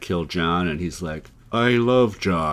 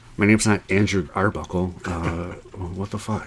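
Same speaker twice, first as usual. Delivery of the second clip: put-on muttering under the breath. Imagining an actor complaining after every line: imitating Andrew Garfield muttering under breath. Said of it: "he just keeps kinda saying under his breath".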